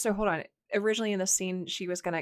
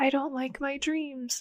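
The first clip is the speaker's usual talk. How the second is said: put-on really tiny, high small child's voice; 7 semitones higher than usual. Retelling what a crying girl said after being sent back to bed: tiny kid voice. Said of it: "like in this really tiny kid voice".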